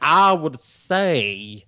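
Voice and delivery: put-on very careful, slow, over-pronounced, drawn-out drunken speech. Showing how very drunk people talk: imitating slow over-pronounced drunk speech. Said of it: "real slow with their words, but they're very pronounced".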